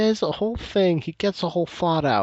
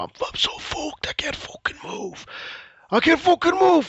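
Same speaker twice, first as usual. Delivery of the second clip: very high, loud desperate yell; 10 semitones higher than usual. Imitating a very high man in crisis, imitating someone shouting.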